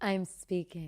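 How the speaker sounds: calm, cool put-on politician voice. Acting out a calm reply to an interruption: calm Kamala Harris "I'm speaking". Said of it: "a calm, cool, 'I'm speaking,' Kamala style".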